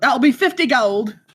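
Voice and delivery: put-on loose, light Scottish accent. A character handing over prosthetic limbs and asking for payment, in a kind of Scottish accent. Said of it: "He was like kind of like a Scottish accent".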